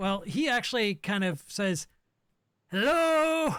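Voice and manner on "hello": loud, very high-pitched shout. Voicing a character calling out to the players: shouting. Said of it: "he's shouting at you".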